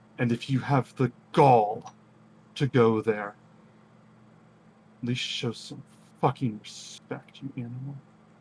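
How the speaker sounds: snarling voice. Voicing a character who snarls at another during a standoff: snarling. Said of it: "just snarls and says".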